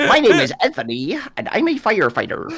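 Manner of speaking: nasal character voice. Retelling how another player answered a request for a Tekken impression. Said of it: "How's your Tekken impression?".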